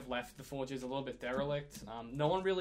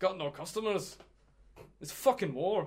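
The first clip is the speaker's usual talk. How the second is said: loud, pitched-up, complaining dwarf voice; 5 semitones higher, 5 dB louder than usual. Voicing a dwarf shopkeeper greeting a customer: dwarf shopkeeper voice. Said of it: "bangs on the counter and goes".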